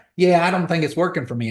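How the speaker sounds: put-on Georgia mountain country accent. Retelling what their sister said about her progress, in a country bumpkin accent. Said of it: "She's got a country bumpkin accent".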